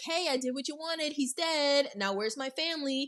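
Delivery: loud yelling voice, pitched high. Retelling a movie scene where Larry calls out to the killer: imitating Larry yelling. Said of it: "So Larry yells out".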